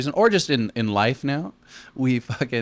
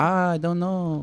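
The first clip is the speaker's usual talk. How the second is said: put-on very slow, pitched-up Mexican accent; 7 semitones higher than usual. Retelling prank calls, quoting a person who answered, in a mexican accent. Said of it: "you do the accent a little bit more?".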